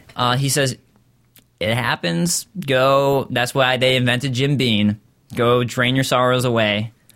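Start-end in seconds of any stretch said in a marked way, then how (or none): none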